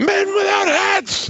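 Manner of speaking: very high, piercing yell at the top of the lungs. Speaker retells yelling out in the car during a phone call, retelling a top-of-lungs yell. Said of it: "at the top of my lungs, I yelled out".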